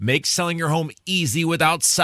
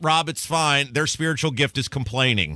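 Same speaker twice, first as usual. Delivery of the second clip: usual speaking voice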